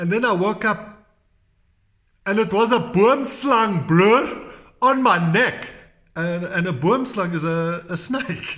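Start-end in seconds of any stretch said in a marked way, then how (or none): 0.0-5.7 big, carrying storyteller voice, loud and pitched up. Retelling what Saki told the guests: imitating Saki speaking loud. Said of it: "he's speaking loud".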